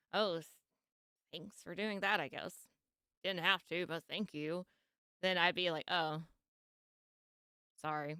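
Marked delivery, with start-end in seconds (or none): 0.1-4.6 sarcastic, mocking, begrudging tone. Showing the kind of thank-you that would make them mad: sarcastic thanks. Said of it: "unless I heard the sarcasm, like".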